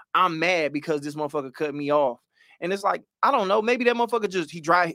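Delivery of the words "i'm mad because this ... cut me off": normal talking voice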